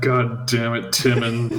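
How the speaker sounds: slow, quiet mutter under the breath. Casting a spell in character, said under the breath. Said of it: "I'm going to say under my breath".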